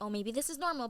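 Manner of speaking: ordinary talk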